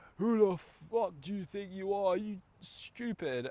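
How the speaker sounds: put-on, high, furious, angry yell. Retelling how an angry driver shouted at him: imitating someone shouting angrily. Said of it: "he was shouting".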